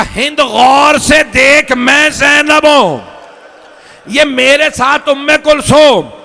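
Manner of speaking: loud, high, slow proclaiming cry.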